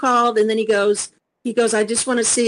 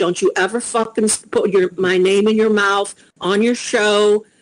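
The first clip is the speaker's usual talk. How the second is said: ordinary talk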